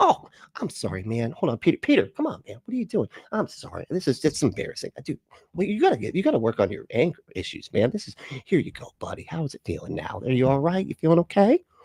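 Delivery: put-on nonchalant voice. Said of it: "I love how he tells that part of the story like it's not just completely insane sounding".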